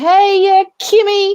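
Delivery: shrill, loud calling-out holler. Recalling a relative yelling from five stores down the mall, retelling a loud yell. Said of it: "real loud".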